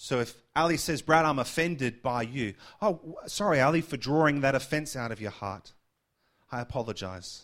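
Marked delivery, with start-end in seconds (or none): 2.8-7.4 mock insincere, sneering, sarcastic delivery. Answering someone who says they're offended, mock apology. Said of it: "I say that in a mocking way".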